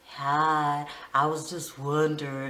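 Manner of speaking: very low, slow, too smooth, creepy voice.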